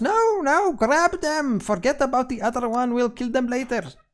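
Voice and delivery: very high, shrill, squeaky shout. A game master voices an enemy shouting orders mid-fight, squeaky voice shouting. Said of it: "the squeaky voice uh, shouts".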